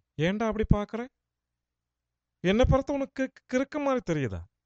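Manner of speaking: imitated man's Tamil speaking style. Describing how a man talks in tamil, impression of a man's tamil speech. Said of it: "அவர் எப்படி பேசுவார்னா".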